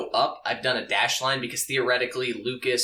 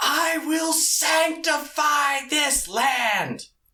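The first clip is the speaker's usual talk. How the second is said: very high, slow, drawn-out scream; 3 dB louder than usual. Voicing an enraged angel who swings a mace: screaming in character. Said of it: "flaming eyes and screams".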